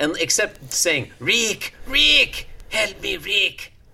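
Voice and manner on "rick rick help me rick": badly done old-movie voice, high, slow, desperate pleading. Quoting a film line: Peter Lorre voice. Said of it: "I'm not good at doing a Peter Lorre voice".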